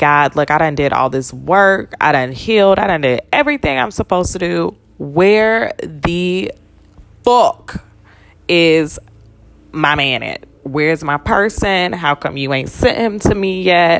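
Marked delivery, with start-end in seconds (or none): none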